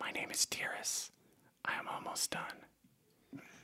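creeping, very slow, whispered creature voice. Voicing a spider creature that speaks to the player: voicing a spider creature. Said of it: "You hear".

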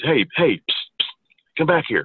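stage whisper. Retelling how a man ducked around a corner and called you back, imitating a whisper. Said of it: "then whispers to me".

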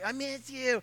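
badly done put-on female voice. A man telling on his wife to a laughing audience, imitating his wife. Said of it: "That's exactly how she does it".

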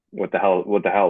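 ordinary talk

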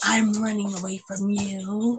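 soft, drawn-out, slow, hushed stage whisper. Retelling what he half-whispered: imitating a half-whisper. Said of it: "and then he whispers".

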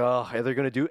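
normal talking voice

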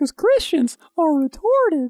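squeaky, high-pitched cartoon voice. A speaker says a joking line, and a listener notes the Gingerbread Man voice. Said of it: "you just sounded like the gingerbread man in Shrek".

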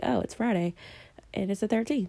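ordinary delivery

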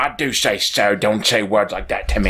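terrible put-on British accent. Retelling what the speaker said back to mr. bruce, in a bad british accent. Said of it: "I had the worst accent with him".

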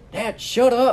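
furious, high-pitched angry yell. Retelling how a dad snapped at the grandpa: imitating someone angrily yelling. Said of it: "the guy was getting so mad".

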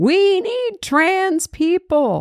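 high, slow, mock screaming.

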